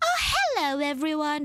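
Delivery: high-pitched social-media presenter voice. Describing their Instagram reels voice, greeting everyone in a high-pitched voice. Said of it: "that kind of high pitched voice".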